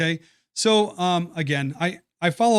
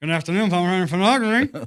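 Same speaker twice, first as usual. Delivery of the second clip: put-on voice as if mouth full of food; 2 semitones higher, 3 dB louder than usual. Retelling answering a business call with a cracker in mouth: imitating talking with cracker in mouth. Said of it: "I have a cracker in my mouth and I'm trying to hide it voice".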